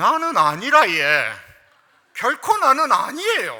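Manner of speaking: very loud, swooping Gyeongsang dialect. Showing how someone from Gyeongsang would say the line, in Gyeongsang dialect. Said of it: "경상도면 뭐라고 했을까요?".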